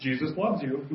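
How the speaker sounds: mock hushed, very quiet, half-sheepish, half-sarcastic. Retelling what someone said as an elevator opened: imitating a half-sheepish, half-sarcastic tone. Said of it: "he says in a half sheepishly, half sarcastic sort of way".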